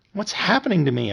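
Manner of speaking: squeaky little mouse voice, tiny and high. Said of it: "I cried in my squeaky little voice".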